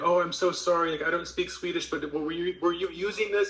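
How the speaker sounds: mock-embarrassed voice. Retelling how a man apologized to a swedish guy, imitating an embarrassed apology. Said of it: "the guy was like really embarrassed".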